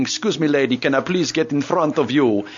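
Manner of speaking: put-on Russian accent. Recalling a game set in communist Poland, quoting a player in a Russian accent. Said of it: "All the best Russian accent come out saying".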